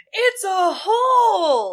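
shrill, very high, very loud, drawn-out shriek. Describing a game cutscene as a cab careens toward a tree, retelling a scream. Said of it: "and then he screams".

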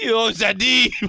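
put-on baby voice shifting into French accent. Asked to do baby talk, trying a bad French-accented baby voice. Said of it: "it's just a French dude".

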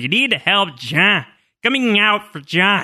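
high cartoonish voice. The speaker mimics how a character says a name, Ana Lucia impression. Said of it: "like a Ren and Stimpy character is what you're starting to sound like with your Anna Lucia voice".

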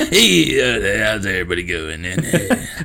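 heavy smoker's voice in announcer style. Mocking an announcer who sounds like a heavy smoker, imitating his smoker's voice. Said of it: "he's just like".

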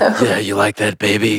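put-on raspy 50-year-old smoker voice. Teasing a co-host about the voice he finds attractive: raspy 50-year-old smoker voice. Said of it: "you like the raspy 50-year-old smoker voice".

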